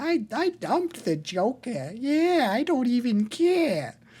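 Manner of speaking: very high, slow, swooping Boston drawl with Boston vowels. Quoting a movie character, impression of Margot Robbie's Harley Quinn. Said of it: "my impression of Margot Robbie's Harley Quinn".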